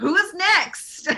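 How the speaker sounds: high-pitched shouting. Calling back to the others through a tunnel: yelling over shoulder. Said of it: "So then I yell over my shoulder".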